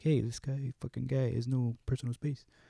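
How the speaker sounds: put-on very soft, very quiet old man voice. Telling about a man with no personal space, in an old guy voice. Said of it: "I sound like an old guy".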